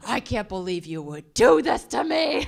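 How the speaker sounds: unhinged, betrayed, very loud and high yell. Retelling yelling at a boss on a plane: retelling yelling at someone. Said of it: "I started yelling at Ben Rhodes".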